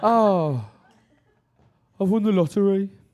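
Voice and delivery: loud Birmingham accent, inflection dropping at the end. Speaker shows how the accent makes good news sound bad, birmingham accent, falling inflection. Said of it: "the inflection goes down at the end".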